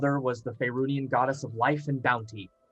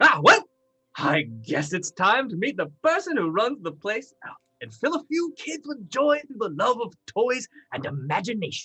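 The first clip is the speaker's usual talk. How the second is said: high gnome character voice, put-on; 8 semitones higher, 4 dB louder than usual. Voicing the gnome toy maker breaking the calm: gnome toy maker voice. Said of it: "the gnome toy maker's voice".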